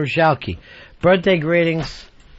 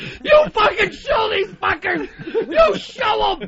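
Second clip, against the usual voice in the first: mock, loud yelling, very high-pitched. Retelling how he yelled at his friends while they were ordering, retelling own yelling. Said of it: "I'm fucking yelling at them like that".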